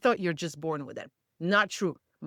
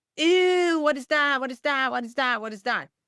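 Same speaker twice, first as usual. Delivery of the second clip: repeated childish jeering, mocking schoolyard-style ridicule; 5 semitones higher, 4 dB louder than usual. A mother retelling how kids at school teased her son, imitating kids mocking. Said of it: "all the kids made fun of him".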